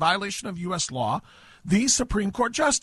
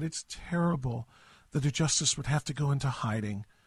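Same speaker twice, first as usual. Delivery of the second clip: sarcastic put-on sadness, lower and quieter; 6 semitones lower, 6 dB quieter than usual. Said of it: "hear the sadness in her voice".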